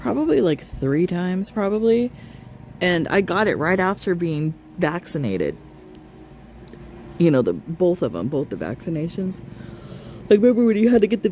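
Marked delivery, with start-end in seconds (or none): 10.3-11.3 high, quick words pushed out mid-yawn. Talking to Bear about getting vaccinated, yawning while talking. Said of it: "Excuse me, I'm yawning".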